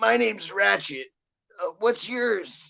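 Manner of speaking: strained, raspy, high voice squeezed out. Quoting the character introducing himself in the old game: Ratchet voice, strained and raspy. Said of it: "I just coughed because I was doing the voice. ... it sounded so like strained".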